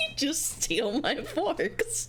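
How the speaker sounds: talking through laughter. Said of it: "Sorry for my honk laugh".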